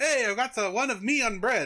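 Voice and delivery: poor, bad put-on French accent, slow and high. Telling a story, voicing a man's line in a bad french accent. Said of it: "This is not a good French accent".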